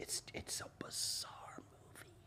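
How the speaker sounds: hushed whisper. Chatting about a movie before starting a review, whispering. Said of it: "Why are you whispering?".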